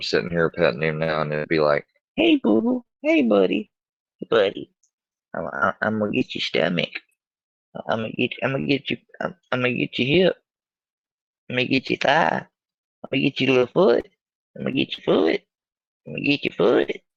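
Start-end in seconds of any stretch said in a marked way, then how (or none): 2.2-16.9 put-on silly, high, sing-song baby talk. Petting his dog, the speaker shows how he talks to it: silly voice talking to dog. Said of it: "talked in a silly voice to their dog".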